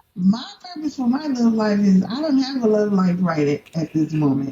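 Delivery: smile clearly audible in the voice throughout. Answering a question about their love life, smiling while talking. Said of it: "I can hear it in your voice".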